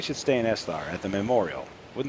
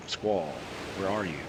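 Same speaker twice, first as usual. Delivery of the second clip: normal talking voice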